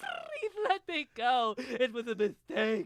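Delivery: very high, swooping, drawn-out crying plea. Retelling pleading before a parole board as Roger Rabbit: imitating crying as Roger Rabbit. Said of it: "I just started crying and going".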